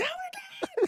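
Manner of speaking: put-on girl's very high-pitched squealing scream. Retelling a near fall during a pep rally skit: imitating a girl screaming. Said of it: "the girl screaming".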